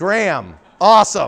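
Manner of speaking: loud, high, thrilled calling out.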